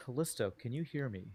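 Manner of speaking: very soft, gentle, hushed calling voice. In a role-play game, a character calls out to someone, very quietly. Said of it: "very quietly".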